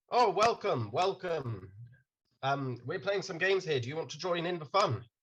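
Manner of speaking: warm, welcoming fake Irish accent. Voicing the character Narud to another player, fake Irish accent. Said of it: "Just once I hear a fake Irish accent, I can't help slipping into one myself".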